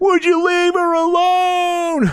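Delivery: very high, very slow, pleading weeping. Retelling a video's plea to leave her alone, imitating Chris Crocker weeping. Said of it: "he's, like, weeping over it".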